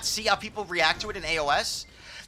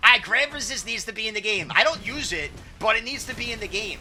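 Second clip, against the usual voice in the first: ordinary talk, nothing marked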